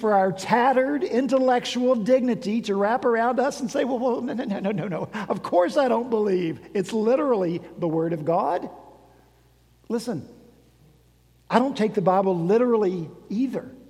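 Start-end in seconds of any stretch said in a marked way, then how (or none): 3.8-8.7 flustered, stammering, stuttering speech. Acting out a shamed believer's answer to a challenge: imitating a stammering, flustered reply. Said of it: "to stutter and to".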